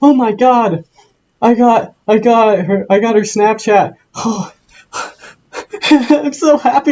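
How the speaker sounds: mock thrilled, high, excited voice breaking mid-word. Retelling to a friend how someone gushed after getting a girl's contact, imitating an excited, cracking voice. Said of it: "My voice is cracking".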